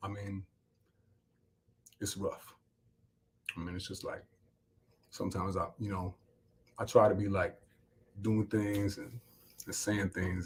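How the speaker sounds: downcast, glum, subdued, low-energy voice. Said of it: "Will, usually you sound more upbeat".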